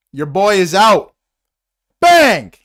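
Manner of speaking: loud, fired-up, swooping yell. Calling a baseball game for listeners, speaker announces two outs, yelling into the mic. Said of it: "Sorry if I'm yelling into the mic".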